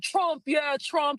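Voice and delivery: insistent, high, repeated yelling, acted out. Retelling what a man in a pickup truck kept yelling: imitating a man yelling. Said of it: "he just kept yelling".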